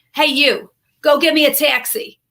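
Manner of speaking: put-on slow, drawn-out Long Island accent. Retelling what the actress she assisted said after rehearsal: Joan Roberts impression, Long Island accent. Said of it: "She's from Long Island".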